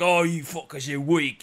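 put-on taunting monster orc voice. Describing how an orc treats little goblins, orc voice. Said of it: "The orc voice is always a treasure".

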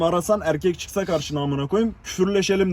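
ordinary talk, nothing marked

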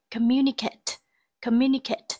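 communicate said with stress on second syllable. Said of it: "trọng âm rơi vào âm tiết thứ hai".

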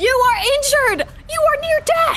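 shouting. During a car chase, one character calls to another, yelling. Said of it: "Please, stop yelling".

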